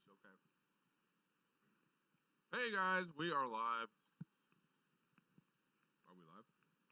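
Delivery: mumbled, talking through a mouth full of food. Entertaining the livestream crowd while the other host checks, talking with mouth full. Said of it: "With a mouthful of goldfish".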